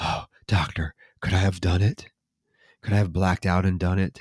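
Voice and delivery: darkly menacing, sinister, ominous tone. Retelling a film scene where a patient asks his doctor: imitating a sinister question. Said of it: "he very sinisterly asks".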